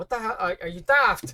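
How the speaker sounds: put-on very loud, high, hard Irish accent. Answering a customer's strange drink order, in a hard irish accent. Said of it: "in the hard Irish accent".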